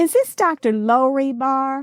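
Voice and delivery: put-on slow, drawn-out North Alabama accent. Retelling a phone caller's question: imitating a North Alabama accent. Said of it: "She sounded more like".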